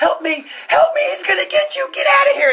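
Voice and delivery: very high, loud, full-throated yelling. Retelling a haunted house scene where a girl wakes on a gurney: imitating a girl yelling. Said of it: "she starts yelling".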